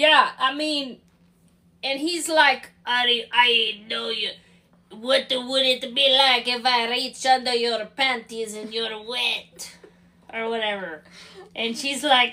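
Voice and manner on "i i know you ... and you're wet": put-on French chef voice. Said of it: "You sound like a chef from Ratatouille".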